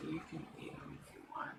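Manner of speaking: hushed whisper. Telling another character in secret that they can eat him: whispering in character. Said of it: "I whisper to you".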